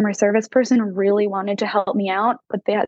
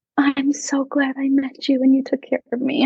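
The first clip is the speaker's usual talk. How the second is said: put-on sweet, grateful, high little old lady voice; 5 semitones higher than usual. Quoting a woman who holds your hand, in a sweet little old lady voice. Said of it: "a sweet little old lady who holds your hand and is like".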